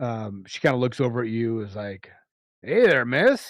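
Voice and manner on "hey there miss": rough, raspy, high, loud dwarf woman voice. Narrating a scene, a short dwarf greets you, in a raspy dwarf voice. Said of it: "has a a a raspy, uh, voice".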